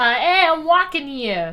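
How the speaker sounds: put-on classic New York street accent. Quiz contestant told to answer in their best New York accent. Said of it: "in your best New York accent".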